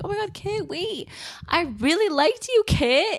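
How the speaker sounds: put-on high, tearful screaming cry. Retelling a character screaming at a vision of someone drowning, imitating someone screaming. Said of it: "she starts screaming like".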